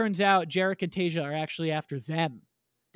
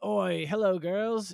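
put-on Australian accent. Retelling a game's story, the speaker quotes the leader Kano in Kano's Australian accent. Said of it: "the character was Australian".

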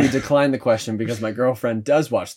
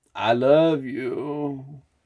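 put-on passionate delivery, higher; 3 semitones higher than usual. Acting out the kind of partner wanted: imitating a passionate lover. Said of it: "a passionate Mohecka that's like".

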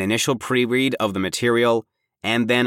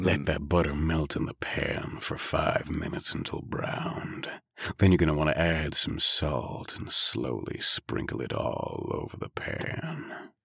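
full, soft, breathy sultry delivery; 7 semitones lower, 8 dB quieter than usual. Reading a recipe aloud in their best narrator voice; sultry recipe voice. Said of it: "if you want to go full sultry recipe".

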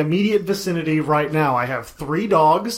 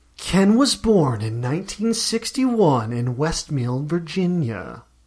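dramatic, put-on narrator voice; 2 semitones lower than usual. Asking to do a quick bit, the speaker performs a Snapped narrator voice. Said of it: "my best snapped voice".

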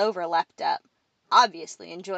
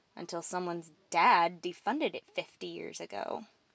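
plain

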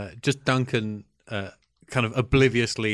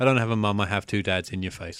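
completely deadpan, put-on delivery. Recounting a comeback to Sam Rockwell's joke, retelling it completely deadpan. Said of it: "completely deadpan".

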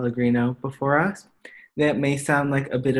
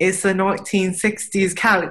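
rough attempted Australian accent, pitched up; 6 semitones higher than usual. Retelling what an Australian guy told them about the couch: attempted Australian accent. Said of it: "I can't do the Australian accent".

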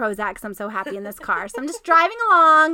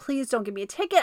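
put-on pleading on the verge of tears, quieter; 7 dB quieter than usual. Retelling begging an officer not to give a ticket: near-tearful plea. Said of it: "I'm about to, you know, start crying".

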